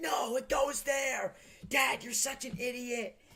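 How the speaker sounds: very high-pitched, loud, shrieking screaming. Retelling a father and daughter fighting over a seltzer bag: retelling a screaming fight. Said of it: "they started screaming, like".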